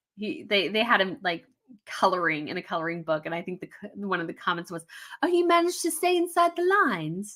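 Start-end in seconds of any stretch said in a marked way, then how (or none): 5.2-7.4 pitched-up put-on British accent. Quoting a comment about a man coloring in a coloring book, imitated british accent. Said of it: "that was also my British accent imitation".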